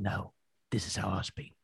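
very quiet, soft, slow, threatening voice. Retelling what was said to an old man at the gym: threatening Ray Winstone voice. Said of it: "Proper threatening, Ray Winston style".

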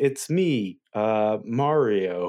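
very slow, halting, dragged-out, lame character voice. Imitating an actor voicing Mario even worse: Chris Pratt as Mario. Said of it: "even worse, he'd be like".

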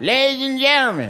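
high, pleading, announcing beggar's call voice. Talking about people who beg on the train, imitating a train beggar. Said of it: "You hear the voice when the doors slide open".

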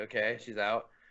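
normal talking voice

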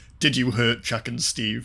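plain

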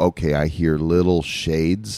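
usual speaking voice

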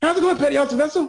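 very high-pitched, quick big-man voice. Describing a big master chief with a really high voice; imitating a high-pitched voice. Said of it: "he had this really high-pitched voice".

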